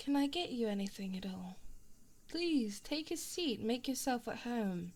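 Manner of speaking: put-on British-accented character voice. Playing a shut-in character speaking to a visitor, with a British accent. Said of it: "I'm a bit of a shut-in ... british accent".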